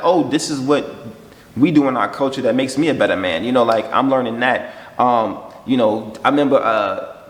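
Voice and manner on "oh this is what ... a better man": ordinary talk, nothing marked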